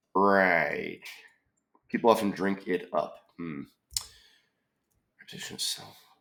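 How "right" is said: scheming supervillain voice. Saying one word as a joke, with a Dr. Evil accent. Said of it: "I'm going to say that with the Doctor Evil accent".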